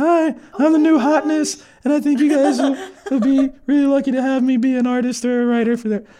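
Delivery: squeaky, very high, cracking little voice. Recalling phoning a studio at seventeen, imitating their own cracked teenage voice. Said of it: "with My little cracked voice".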